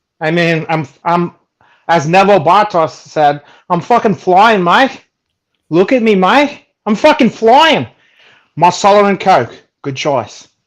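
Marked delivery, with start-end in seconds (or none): 3.7-7.9 put-on, pitched-up Australian accent. Quoting a line from Chopper in a put-on accent: Neville Bartos Aussie accent. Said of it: "Is that an Aussie accent?".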